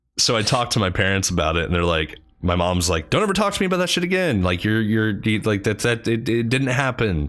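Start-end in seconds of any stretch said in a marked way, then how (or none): 3.1-7.3 mock high, agitated, upset mom voice. Telling of talking to their parents about it, the speaker quotes mom, imitating her freaked out. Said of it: "And she's like freaked out".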